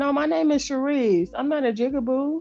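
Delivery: gentle, soft, polite, nice-sounding tone. Retelling a reply to a child who called names: retelling own nice reply. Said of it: "I was trying to be nice".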